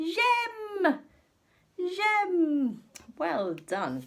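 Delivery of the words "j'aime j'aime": very loud, very high, drawn-out call of j'aime. Leading a class in repeating a French word: saying it really loudly. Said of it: "really loudly".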